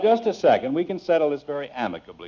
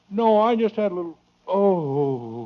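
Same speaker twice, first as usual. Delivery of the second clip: pained, drawn-out groan, oh stretched; 4 semitones higher than usual. Man addressed as Father, asked if something is wrong, answering with pained groaning. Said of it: "You sound like you're dying".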